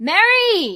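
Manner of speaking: loud, high-pitched yelling.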